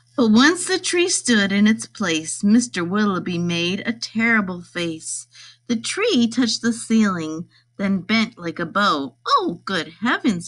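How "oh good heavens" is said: gasped out with a sharp intake. A man sees the tree bent against his ceiling and exclaims, gasping. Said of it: "he gasped".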